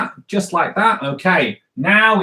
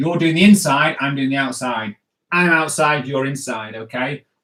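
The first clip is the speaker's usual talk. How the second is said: plain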